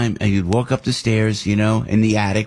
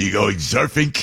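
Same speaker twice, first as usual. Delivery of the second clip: put-on Brooklyn accent. Recalling his dad from brooklyn, the speaker quotes him: imitating dad's brooklyn accent. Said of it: "because he's from Brooklyn".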